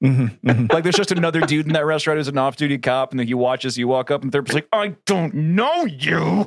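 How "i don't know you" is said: very slow speech through clenched, gritted teeth. Retelling a restaurant encounter with an off-duty cop, imitating speaking through gritted teeth. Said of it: "through gritted teeth".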